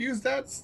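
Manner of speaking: high-pitched yell. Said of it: "yell out".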